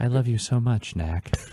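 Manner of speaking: put-on whisper. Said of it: "Just him whispering".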